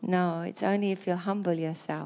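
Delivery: ordinary talk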